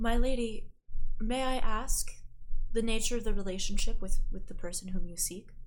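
discreet, confidential tone after a pause. Narrator voices Vidithas replying to the player; Vidithas speaking very quietly. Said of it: "very quietly says".

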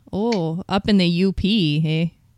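Upper Michigan accent. Chatting with a friend about trying a Michigan accent, doing a northern Michigan accent. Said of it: "That's northern Michigan".

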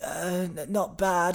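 timid, flat mumble, very slow and soft. Imitating a rugby player answering an interviewer after winning the World Cup: imitating Johnny Wilkinson, shy and dull. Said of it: "He's, like, shy, isn't he?".

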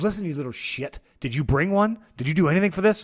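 fake angry snapping. Retelling how a stepmom snapped at a complaining teenager, in a mock-angry snap. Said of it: "Vance's stepmom snaps and goes".

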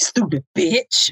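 "bitch" landing real hard, harsh and mad. Imitating how dudes say it when mad: saying bitch hard. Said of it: "they say bitch real hard".

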